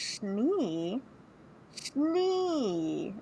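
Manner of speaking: soft, puzzled murmur with "Schnee" stretched long. Recalling trying to place why a name sounded familiar: retelling own puzzled muttering. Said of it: "I was like".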